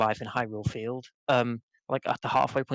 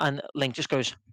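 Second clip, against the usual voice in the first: ordinary talk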